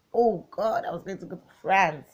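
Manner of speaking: put-on loud, thrilled, excited childlike squeal. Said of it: "You can imagine my excitement at nine years".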